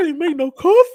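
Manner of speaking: voice breaking very high. Retelling what a man said, imitating how his voice cracked. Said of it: "That's why I did my voice like that".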